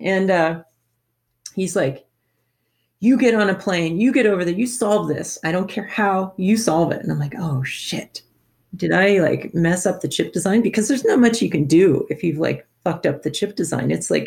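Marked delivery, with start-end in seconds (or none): 3.0-7.0 angry, irate yell. Retelling an angry phone call from a New York toy executive, retelling an angry yell.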